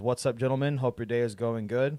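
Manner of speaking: ordinary delivery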